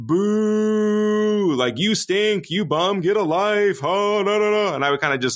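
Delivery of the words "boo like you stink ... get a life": teasing, joking long boo, voice way up high. Speaker recalls jokingly heckling an 18-month-old who missed a shot: imitating themself jokingly booing. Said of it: "I jokingly one day just kind of said".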